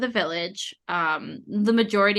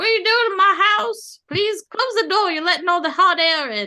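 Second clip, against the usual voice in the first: very high, raised, put-on elderly lady voice; 11 semitones higher, 6 dB louder than usual. Describing a door that opens on an elderly lady, voicing her in an elderly lady voice. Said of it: "one of them's like an elderly lady, and she's like".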